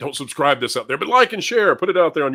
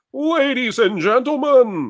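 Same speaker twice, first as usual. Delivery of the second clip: very high, show-opening announcer voice; 10 semitones higher than usual. Showing how the intro was done originally: Don Pardo announcer voice. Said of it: "I did the Saturday Night Live voice".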